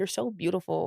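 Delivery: soft put-on Spanish LA accent. Quoting a guy she loved back in la, imitate his spanish la accent. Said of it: "He had like that Spanish L A accent".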